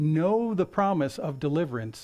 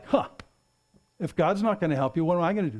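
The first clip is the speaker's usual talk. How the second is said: sarcastic, dismissive, flippant, mocking retort. Retelling a man's comeback in a story, mock-sarcastic. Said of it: "he comes back sarcastic like".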